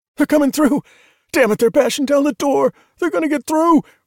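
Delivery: frantic, desperate radio voice, very high, panicked. A voice from one of the radios cuts through the rest, desperate, panicked voice. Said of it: "A desperate voice from one of the radios cut through the rest, the panic palpable".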